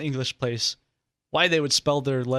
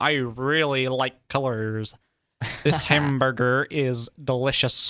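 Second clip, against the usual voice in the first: overdone American accent leaning on hard R's. Imitating a British person doing an American accent: exaggerated American accent. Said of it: "If you ever listen to a British person do an American accent, they're like".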